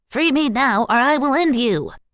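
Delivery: loud, shrill, high, squeaky helium-balloon voice. Reading a story aloud, voicing a character's threat in a high-pitched Munchkin-style voice. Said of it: "high-pitched Munchkin-style voice, like he'd deeply inhaled helium".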